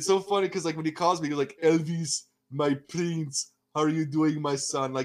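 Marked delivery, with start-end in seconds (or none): 1.6-4.9 put-on heavy, strong, slow, laid-on-thick Romanian accent. Imitating their dad greeting them when he calls; strong Romanian accent. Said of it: "he's got that strong accent".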